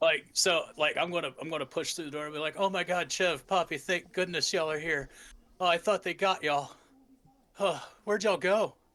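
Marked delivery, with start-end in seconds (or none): 2.6-8.7 feigned scared voice. A player role-playing pushing through the door to the guards, acting scared. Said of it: "he's still going to be acting like scared".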